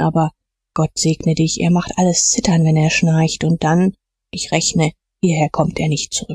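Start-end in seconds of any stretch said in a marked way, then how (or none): none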